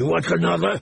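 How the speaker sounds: pressing, insistent, demanding tone. Narrator reads a man threatening her after a slap, demanding. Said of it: "Weasel demanded".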